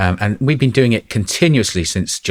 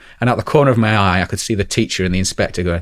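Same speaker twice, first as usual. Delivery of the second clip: ordinary delivery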